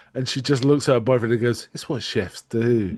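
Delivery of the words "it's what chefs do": oddly unhinged, weird acted-out delivery. Retelling a character's line to her boyfriend, imitating a weird wild-eyed delivery. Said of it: "In a weird, you know, wild-eyed way".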